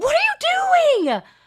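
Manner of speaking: very high scream, with you stretched out. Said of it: "I was screaming at this".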